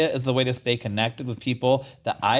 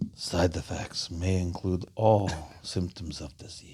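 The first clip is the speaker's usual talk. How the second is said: put-on old vampire voice, lower and quieter; 7 semitones lower, 7 dB quieter than usual. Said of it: "that's a very old vampire".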